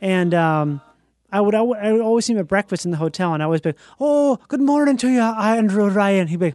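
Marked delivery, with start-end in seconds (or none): 4.0-6.3 imitated Irish accent. Greeting him at hotel breakfast, imitating Andrew Ryan's Irish accent. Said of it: "he had the most perfect Irish accent".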